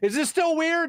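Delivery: high-pitched, loud, called-out yell. Recounting what a naked man kept asking, retelling a yell. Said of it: "And then he's still yelling".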